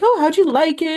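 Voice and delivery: mock cheerful upbeat voice. Retelling mom's question while leaving the theater: imitating mom sounding happy. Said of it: "she's all happy about it".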